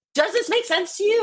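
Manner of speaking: mock shrill, very high, loud scream. The speaker retells screaming at their boyfriend at dinner, retelling own screaming. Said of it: "I'm screaming at him like".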